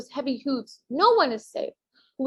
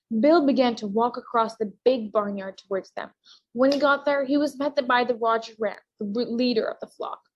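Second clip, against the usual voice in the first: plain reading voice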